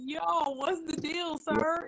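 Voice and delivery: mock fed-up, tantrum-style, high, exasperated outburst. Recounting a temper tantrum with God, retelling exasperated outburst. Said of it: "I had like a complete temper tantrum".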